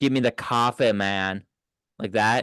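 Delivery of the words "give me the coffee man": Staten Island-accented voice. While others discuss regional accents, giving it a try: Staten Island accent. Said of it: "let me try it".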